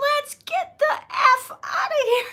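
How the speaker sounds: put-on very high, cute, tiny three-year-old toddler voice. Retelling what a three-year-old said on vacation: imitating a tiny toddler voice. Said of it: "his tiny little cute little toddler three-year-old voice says".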